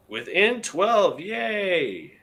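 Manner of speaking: dry, fake, sarcastic cheer with drawn-out yay. Reacting to the team pulling within twelve points: sarcastic. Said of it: "That was sarcastic".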